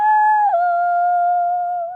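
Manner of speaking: very high, drawn-out hello. Leading a clap-along rhyme, say hello as high as you can. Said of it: "Let's say hello as high as we can".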